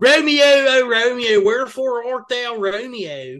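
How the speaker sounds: put-on Philly accent over the line. Redoing an old sketch-team bit, a Philly Romeo and Juliet, in a Philly accent.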